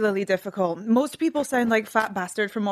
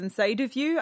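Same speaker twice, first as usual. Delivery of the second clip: normal talking voice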